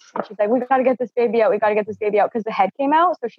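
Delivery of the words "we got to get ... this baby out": plain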